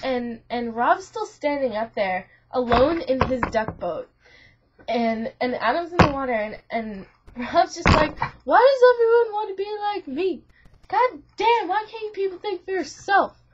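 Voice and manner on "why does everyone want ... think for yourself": high, pissed-off, angry shouting. Retelling a dream where Rob yells at everyone: imitating someone yelling angrily. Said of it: "he's just getting all pissed off".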